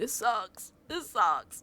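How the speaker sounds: play-acted, slow, tearful crying through the words. Retelling own reaction to a team finishing: imitating own tearful voice. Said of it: "So I'm crying".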